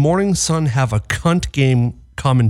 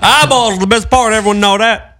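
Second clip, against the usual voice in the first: loud, mumbled Southern drawl; 8 semitones higher, 5 dB louder than usual. Speaker talks the way the creatures talk, in a Boomhauer-style voice. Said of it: "They all sound like Boomhauer".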